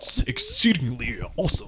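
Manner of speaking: very hushed, very quiet, really low odd weird voice. Answering a question as Thinker would, imitating Thinker's weird, really low voice. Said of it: "I'm trying to make his weird voice".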